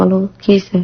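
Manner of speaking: plain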